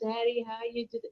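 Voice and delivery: very quiet, soft, hushed little therapist voice. Retelling calling Dad on Mom's birthday after she died, in a little quiet therapist voice. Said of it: "my little quiet therapist voice".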